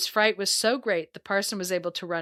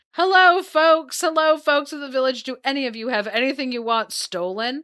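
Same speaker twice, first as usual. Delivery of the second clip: loud, high, raised voice calling out; 5 semitones higher, 7 dB louder than usual. Telling a story, the speaker acts out a woman calling to the village: retelling a call-out. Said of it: "went in front of the houses and called out".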